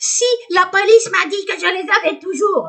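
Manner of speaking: very high, loud, shrill witch screech. Retelling a phone call, imitating the mother's reply in a witch voice. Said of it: "Avec sa voix de sorcière".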